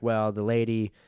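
plain

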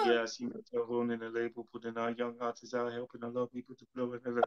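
soft, flat, emotionless deadpan monotone. Speaker acting out a rehearsed interview answer, in a Napoleon Dynamite monotone. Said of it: "I just say it with no emotions".

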